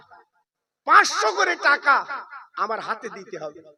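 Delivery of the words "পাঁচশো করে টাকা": emphatic pancho, repeated higher and louder.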